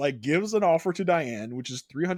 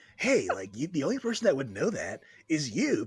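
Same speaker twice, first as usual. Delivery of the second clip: small, scratchy, gravelly, raspy little surfer voice. Imitating a man who sounds like a California surfer, small raspy voice. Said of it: "this is kind of what he sounds like. Like he has this little raspy voice".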